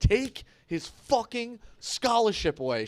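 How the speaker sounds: screamed, high-pitched outburst. Retelling a line the wife overheard: imitating own past screaming. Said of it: "heard me screaming".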